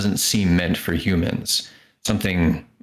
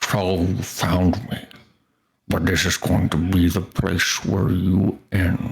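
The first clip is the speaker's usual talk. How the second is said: drool-laden, thick, heavy slobbering monster voice. Narrator voicing an unseen speaker as the party enters the room; slobbering, thick, heavy voice. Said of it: "a slobbering, thick, heavy voice".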